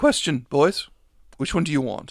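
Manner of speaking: ordinary delivery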